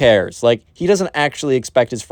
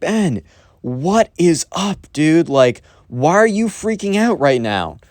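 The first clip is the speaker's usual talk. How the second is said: pitched-up, loud, shouted call; 6 semitones higher than usual. Retelling how someone chased a fleeing person down a hallway, calling after him: retelling a shout. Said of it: "He shouts out like".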